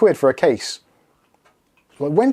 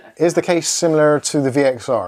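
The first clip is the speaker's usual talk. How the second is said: ordinary talk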